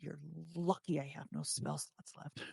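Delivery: soft, quiet, hushed half-whisper. Playing a character who half-whispers down a passageway at someone: half-whispering. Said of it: "I just whisper down in".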